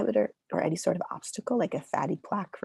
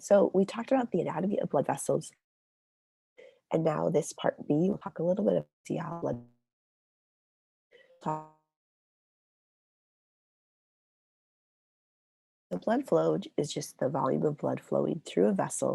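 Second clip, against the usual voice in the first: hoarse, nearly voiceless, voice almost gone. Lecturing through a chapter while having a cold: lost voice from a cold. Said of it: "I lost it. I got a cold".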